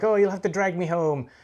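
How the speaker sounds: acted laughter, words spilling out while talking. Retelling a film scene rolling in the park: imitating Ray laughing while talking. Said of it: "laughing like".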